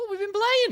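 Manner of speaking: half-hearted, slightly high, silly put-on voice. Introducing the next segment to listeners, in a half-hearted funny voice. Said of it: "I apologize for the tone in my voice. Brain said do funny voice".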